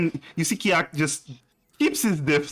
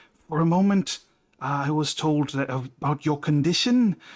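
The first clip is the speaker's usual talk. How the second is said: soft whispering. Voicing a character speaking to a bathing player: whispering in his ear. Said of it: "He's, like, whispering in your ear".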